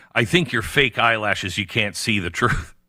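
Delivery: ordinary delivery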